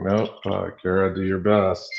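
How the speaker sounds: ordinary talk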